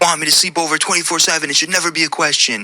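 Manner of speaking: high, shrieking, screaming rant. Retelling what a partner screamed about sleeping over: imitating her screaming. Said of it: "she started screaming at me".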